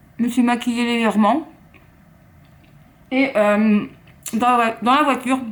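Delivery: muffled speech with mouth full of food. Vlogging her day while eating bread and ham, talking with mouth full. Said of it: "de parler la bouche pleine".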